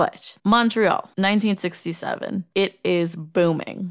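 slow, drawn-out, dramatic narrating voice. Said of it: "Setting the scene".

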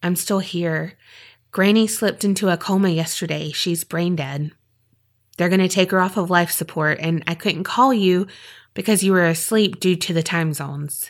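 ordinary delivery

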